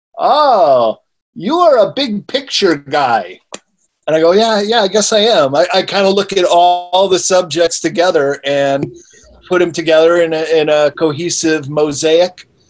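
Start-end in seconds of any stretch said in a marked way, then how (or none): 0.2-3.4 put-on heavy German accent, laid on thick, drawn-out "oh". Recalling an event, speaker quotes a man browsing the speaker's books, thick German accent. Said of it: "a German guy with a thick German accent".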